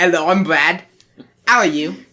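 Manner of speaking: bad put-on British accent, clumsily done. Asked by another speaker to do one, the speaker puts on a bad British accent. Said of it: "I can do a bad British accent".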